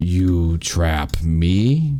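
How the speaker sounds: deep, low, shadowy creature voice. As darkness spreads between the players, the game master voices the thing in a deep voice. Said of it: "a deep voice".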